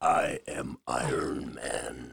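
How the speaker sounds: very deep, slow, drawn-out, creaky, rough delivery. Naming a favorite Marvel character: Iron Man impression. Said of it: "That's a good impression".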